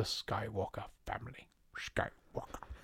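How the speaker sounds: breathy, whispered movie-villain voice. Saying a surname in a put-on voice: Emperor voice. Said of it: "That was my Emperor".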